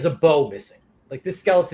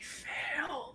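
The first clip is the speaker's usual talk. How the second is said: very quiet, hoarse, raspy, breathy whisper, barely there; 13 semitones higher, 18 dB quieter than usual. Describing a figure that looks at you and speaks: raspy, breathy voice. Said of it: "that sort of raspy, breathy voice".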